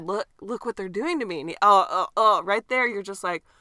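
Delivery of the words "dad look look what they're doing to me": choked-up, tearful pleading with a catch in the throat. Retelling a man's words to his dad during an arrest: imitating someone choked up. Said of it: "he gets choked up".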